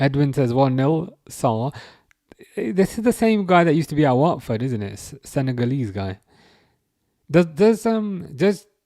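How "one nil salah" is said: ordinary talk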